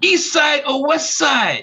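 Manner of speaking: put-on thick Ghanaian accent, pitched very high. Retell a gentleman in Ghanaian attire answering a Detroiter in a heavy accent. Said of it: "in a heavy accent".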